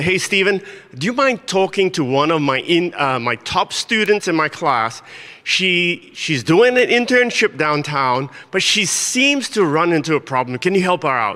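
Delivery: ordinary delivery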